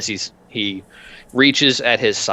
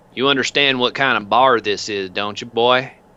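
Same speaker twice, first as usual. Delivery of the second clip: put-on biker accent; 2 semitones higher than usual. Voicing a biker who confronts the player outside a biker bar, biker accent. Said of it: "roll for accent".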